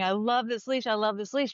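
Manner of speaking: mild, half-shouted acted-out scream, said twice. Recounting how he was out in the surf, imitating someone screaming. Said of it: "he was screaming".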